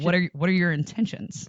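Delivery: put-on condescending voice.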